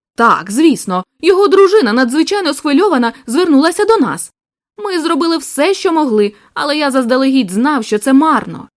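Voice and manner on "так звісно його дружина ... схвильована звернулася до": usual speaking voice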